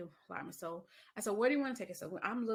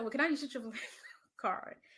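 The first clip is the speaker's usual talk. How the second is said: giggly, laughing through the words; 3 semitones higher than usual. Retelling what she asked, laughing while talking. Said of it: "I don't know why I'm laughing".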